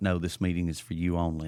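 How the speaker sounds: ordinary talk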